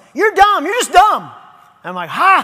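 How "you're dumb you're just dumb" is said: high, rushed, angry yell. Speaker acting out what Satan yells at him, Satan yelling. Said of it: "And then Satan yells".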